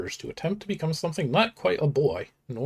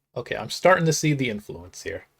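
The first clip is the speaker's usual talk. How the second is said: plain reading voice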